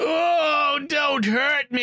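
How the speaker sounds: put-on terrible cowboy-like American accent, high and very slow. Retelling a film scene where the villain is found on the roof: imitating a terrible American accent.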